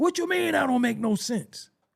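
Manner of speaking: getting loud, very high-pitched and insistent. Describing someone who gets loud when told something makes no sense: imitating someone getting loud. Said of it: "the person will try to get loud".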